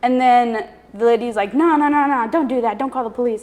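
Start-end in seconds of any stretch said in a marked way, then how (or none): none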